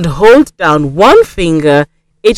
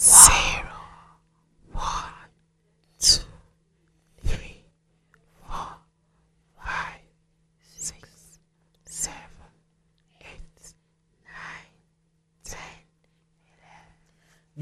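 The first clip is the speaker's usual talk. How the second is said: hushed whisper, very quiet. Leading a counting warm-up together: quiet whisper. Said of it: "Let's count together in a quiet whisper voice".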